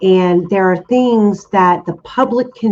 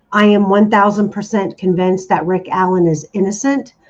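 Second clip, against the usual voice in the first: usual speaking voice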